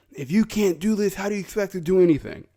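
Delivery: put-on high old man yell. Retelling what an old man at the diving tower said: imitating an old man yelling. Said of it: "there's an old man yelling".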